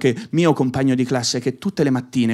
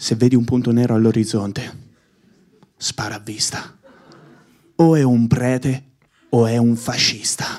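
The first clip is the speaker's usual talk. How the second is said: grave, weighty, slow, solemn, acted-out fatherly voice; 2 semitones lower than usual. Retelling what his father told him while playing, imitating father's solemn voice. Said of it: "mi diceva con voce solenne".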